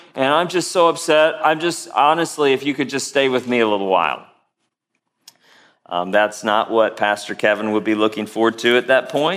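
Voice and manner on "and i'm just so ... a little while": ordinary delivery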